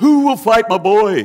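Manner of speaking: high-pitched, loud sideshow barker-style calling voice. Acting out Goliath's side as a sideshow boxing troupe: sideshow boxing troupe caller. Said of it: "like the Sideshow Alley Jimmy Sharman boxing troupe".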